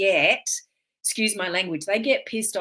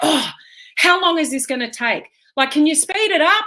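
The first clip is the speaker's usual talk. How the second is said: mock exasperated huffing and puffing, raised and impatient; 8 semitones higher, 7 dB louder than usual. Retelling an impatient man in a supermarket checkout line: imitating an impatient huffing man. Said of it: "he was huffing and puffing".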